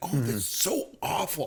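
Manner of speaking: acted, slow, appalled, horrified, dismayed reaction. Retelling a wife's reaction while watching a scene: imitating a horrified wife. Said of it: "horrified that these people were buried".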